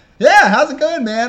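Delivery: very high, loud, buoyant, super upbeat voice. Retelling a meeting, imitating Lamar Hurd's upbeat greeting. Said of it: "super up, like, upbeat".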